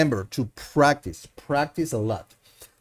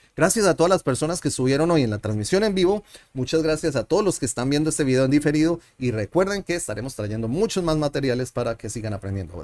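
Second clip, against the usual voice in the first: very fast, rattled-off, rapid-fire Spanish. Closing a Spanish lesson video for viewers, speaking very fast. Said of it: "I'm gonna speak fast".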